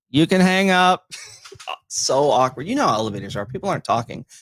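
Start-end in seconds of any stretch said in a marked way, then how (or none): 0.1-1.0 play-acted loud, raised, pitched-up voice. Recounting an accidental call in an elevator, retelling saying it loudly. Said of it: "I have to say loudly on the thing".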